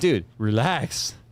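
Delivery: slow, low, calming drawl, words stretched out.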